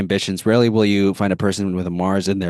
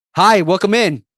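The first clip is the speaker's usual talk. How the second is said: put-on very high, very loud, booming voice; 11 semitones higher, 5 dB louder than usual. Retelling greeting people at the front desk: imitating own loud greeting. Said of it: "very loudly like that".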